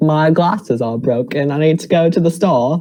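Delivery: put-on British accent that sounds spot-on. Asked for a best British accent on the spot: imitated British accent. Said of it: "Give me your best British accent right now".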